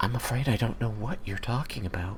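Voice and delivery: very quiet, faint, half-whispered voice. A storyteller voices a woman replying to the listener, in a very quiet half-whisper. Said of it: "just a very quiet, like whisper of a voice".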